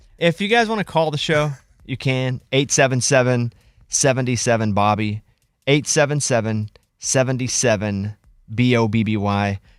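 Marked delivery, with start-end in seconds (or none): 2.5-9.6 slow, deliberate pace, lower pitch. Giving the number to call the show, saying it slowly. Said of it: "I'm saying the number slow".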